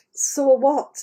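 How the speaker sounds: ordinary talk, nothing marked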